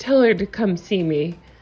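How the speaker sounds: ordinary talk, nothing marked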